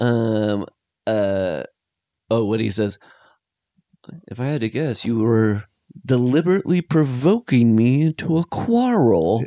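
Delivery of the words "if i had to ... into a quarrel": put-on quaint, old-fashioned nineteenth-century style of speaking. Quoting a film character's line at the table: imitating his funny way of talking. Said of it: "the way he talks is so funny".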